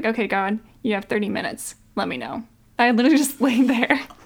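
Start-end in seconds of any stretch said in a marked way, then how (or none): 0.0-2.4 put-on sassy voice. Retelling what they told him before he didn't answer: retelling a sassy message. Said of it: "wow, you're sassy".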